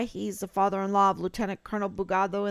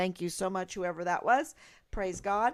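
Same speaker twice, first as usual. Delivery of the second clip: normal talking voice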